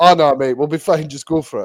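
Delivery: ordinary delivery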